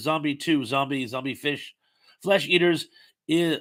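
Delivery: ordinary talk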